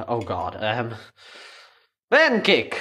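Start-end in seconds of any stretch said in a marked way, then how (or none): 2.1-2.8 appalling put-on Russian accent, higher and louder. Cooking pancakes and joking about the word: bad Russian accent. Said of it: "as a Russian would say".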